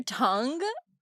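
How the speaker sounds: 'tongue' stressed, leaned on heavily. Telling a friend about something seen on TikTok, with stress on 'tongue'. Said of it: "why am I saying it like that?".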